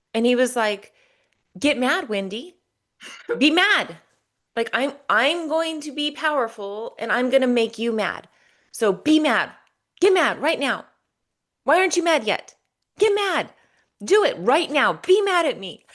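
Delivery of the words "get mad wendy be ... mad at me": comical mock-bossy voice, much higher pitch. Recounting how he tried to make Wendy mad, comic imitation of demands. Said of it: "what he did was very kind of comical".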